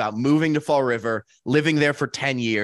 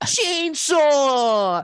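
put-on whiny little boy voice, higher pitched; 13 semitones higher, 3 dB louder than usual. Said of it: "little kid voice that he does".

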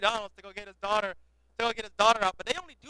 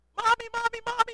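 put-on very high, frightened small child calling; 13 semitones higher than usual. Speaker acts out a child halfway up a slide ladder, imitating a scared child. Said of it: "halfway up the ladder they get scared".

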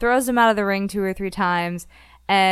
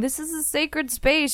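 put-on yell, higher pitch; 7 semitones higher, 4 dB quieter than usual. Retelling a show scene where a referee yells at a man. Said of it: "the ref is yelling at him".

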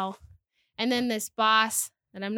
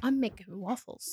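goofy cartoon donkey voice, quieter; 5 dB quieter than usual. Retelling someone's reply to a question, in a Donkey from Shrek voice. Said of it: "all I could think of was Donkey from Shrek".

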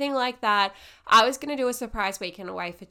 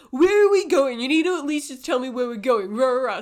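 grumpy, impatient, demanding complaining voice; 3 semitones higher, 4 dB louder than usual. Speaker imitates a hangry man before breakfast, mock-grumpy. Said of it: "he's all like grumpy".

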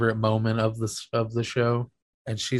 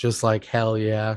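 ordinary talk, nothing marked

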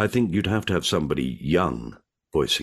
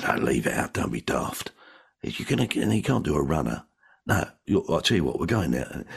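put-on South London accent with docker-style voice. Imitating how their dad talked to crooks, in a south london docker accent. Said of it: "they talked like that".

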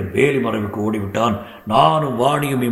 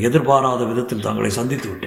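ordinary delivery, nothing marked

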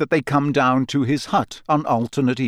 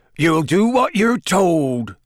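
words growled out; 4 semitones higher, 3 dB louder than usual. Narrator reading Hagrid's reply to Malfoy: growling. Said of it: "he growled".

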